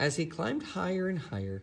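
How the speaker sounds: ordinary delivery, nothing marked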